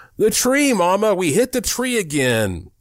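put-on children screaming, pitched very high. Two boys burst through the door to their mother, screaming. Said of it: "both tore through the door screaming".

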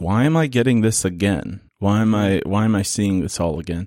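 plain

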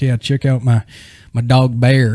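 cowboy-style accent impression. Retelling how an uncle showed off his dog, in a put-on cowboy accent. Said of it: "he had like a cowboy figure. accent".

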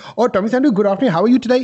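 imitated Indian accent. Retelling a call-center caller asking for him: imitating an Indian accent. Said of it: "they speak with an Indian accent".

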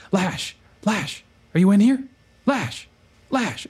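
loud stage whisper. Character checks the hall is clear, then calls for lash at doors in a loud whisper. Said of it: "starts kind of loud whispering at doors".

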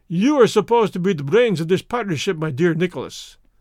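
ordinary delivery

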